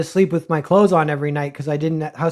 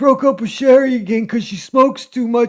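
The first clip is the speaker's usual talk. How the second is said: put-on old man voice, higher; 7 semitones higher, 3 dB louder than usual. Retelling what a lonely old man at a booth said: impression of an old man. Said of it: "That's a great impression".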